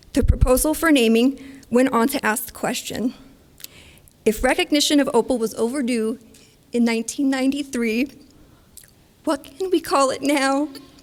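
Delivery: choked-up voice, thick with emotion and catching. Reading aloud a naming proposal for opal, getting choked up. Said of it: "it's choking me up".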